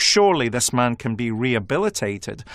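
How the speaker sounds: usual speaking voice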